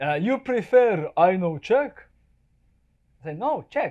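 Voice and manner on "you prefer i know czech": put-on Russian accent spoken with a raised voice. Retelling a worried question to a man, who answers in a Russian accent. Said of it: "he tells me in a Russian accent".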